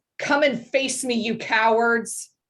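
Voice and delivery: single voice yelling loudly, challenging tone. Voicing a magically summoned voice in a game scene: calling out. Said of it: "calls out from this".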